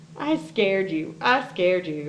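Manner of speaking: proud, crowing, gloating little-monster voice. Storyteller reading the little monster's line to the boy: Fang crowing. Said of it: "crowed the little monster".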